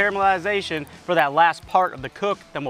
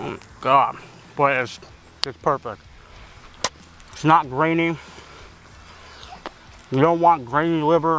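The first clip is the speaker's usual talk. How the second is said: speaking with mouth full of food; 3 semitones lower than usual. Tasting liver and describing its texture, talking with mouth full. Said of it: "I just keep talking even though my mouth's full".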